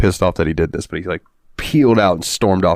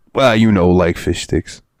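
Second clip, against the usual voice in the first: put-on thick New York accent. Retelling a friend turning down fish: imitating Lenny's thick New York accent. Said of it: "he's got that real thick New York accent".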